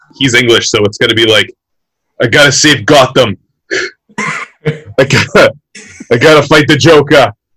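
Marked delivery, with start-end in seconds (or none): 2.2-7.3 slow speech in a Boston accent. Guessing how an English actor will voice Batman, Boston-accent Batman voice. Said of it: "that's so Boston".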